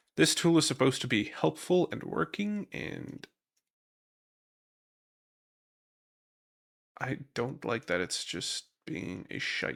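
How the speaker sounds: exasperated, frustrated, annoyed complaining voice. Reacting to a game tool that isn't working: frustrated. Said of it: "I'm getting a little frustrated with this".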